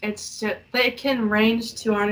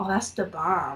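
corny put-on grandma-type voice; 5 semitones lower, 5 dB quieter than usual. Explaining old slang, imitating the grandma friend: imitating the grandma friend. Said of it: "the grandma friend, and you'll say, like".

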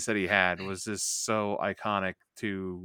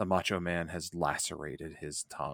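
low, dead serious commentator voice; 4 semitones lower, 7 dB quieter than usual. Retelling a wrestling commentary call: serious Gorilla Monsoon voice. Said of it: "Gorilla Monsoon in a serious voice is like".

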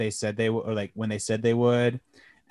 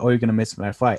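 mock-playful, louder and faster; 6 dB louder than usual. Retelling a movie's ending as she dances, imitating someone speaking playfully. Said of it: "she kind of like playfully says".

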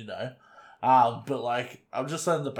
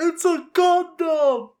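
full-lung shout, very loud, very high, shrill; 10 dB louder than usual. Joking about getting directions in japan: pretend shouting at top of lungs. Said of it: "start shouting at the top of my lungs".

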